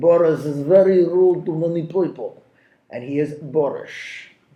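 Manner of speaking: English with a put-on Russian accent. A speaker giving the day's vocabulary mnemonic about a man named boris, in a russian accent. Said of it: "there's my Russian accent".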